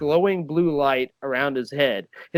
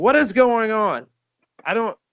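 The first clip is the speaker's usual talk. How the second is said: high, alarmed, half-panicked bewilderment; 6 semitones higher, 4 dB louder than usual. Voicing a tiefling looking around in semi-panic: tiefling in a semi-panic. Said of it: "he's looking around in sort of a semi-panic".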